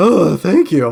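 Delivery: cracking, breaking voice going up high. Thanked for a compliment on speaking voice, voice cracking. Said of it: "my voice just cracked".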